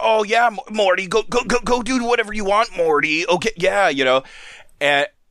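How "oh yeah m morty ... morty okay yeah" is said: stuttering, crazed and high-pitched. Retelling a Rick and Morty scene: imitating Rick acting crazy. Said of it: "Rick's acting all crazy, and he's like".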